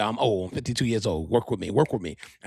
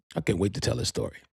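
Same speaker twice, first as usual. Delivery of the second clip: ordinary talk, nothing marked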